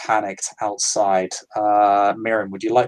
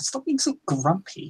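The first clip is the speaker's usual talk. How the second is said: put-on faint, soft, very high young woman's voice; 10 semitones higher, 6 dB quieter than usual. Game master voicing an unseen voice heard over a barking dog, as a young woman. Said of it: "It sounds like a young woman".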